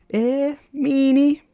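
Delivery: very high, loud, squeezed-out character voice. Reading dialogue aloud, voicing the reply after being turned down: Sayori voice. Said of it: "I promise I can normally do higher voices than this".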